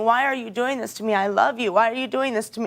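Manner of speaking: put-on tearful, sobbing voice. Retelling being locked out and begging him to let her stay: retelling her own crying plea. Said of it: "I was crying".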